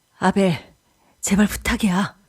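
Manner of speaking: trembling voice. Reading a story aloud, the narrator pleads with an angry friend: trembling voice. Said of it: "떨리는 목소리로 말했다".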